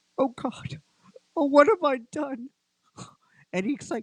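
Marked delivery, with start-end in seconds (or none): 0.2-2.5 high, tearful voice on the verge of tears. Game master voicing a man whose eyes well up as you speak: tearful. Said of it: "you can see his eyes start to wail, uh, well up".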